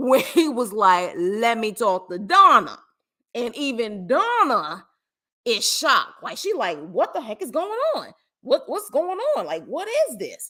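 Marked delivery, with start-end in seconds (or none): 1.2-2.8 put-on Jersey accent, full and all-in. Recounting what a man said, imitating a jersey accent. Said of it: "Every bit of Jersey, every bit of East Coast came out".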